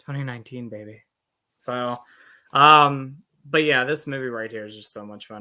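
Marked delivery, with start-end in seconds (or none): 0.0-1.0 seductive, put-on sexy voice. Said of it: "I'm gonna say it in a sexy voice".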